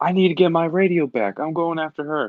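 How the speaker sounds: yelling in character. Calling out in character before chasing after someone: in-character yell. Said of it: "I'm gonna yell".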